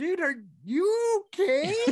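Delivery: mock very high voice, stifled laughter, slow. Retelling what a man from a nearby couple said to him after a crash, imitating someone holding back laughter. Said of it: "the dude was trying so hard not to laugh".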